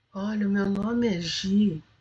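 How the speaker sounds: gentle, low-key, soft murmured voice. Retelling how a retired woman introduced herself, imitating her speaking softly. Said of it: "ela falando baixinho".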